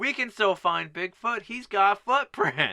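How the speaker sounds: put-on high, hammed-up, stagey child's shout. Recapping a bigfoot story, the speaker acts out a kid's line, imitating a kid shouting. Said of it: "the kid with his great acting skills shouts".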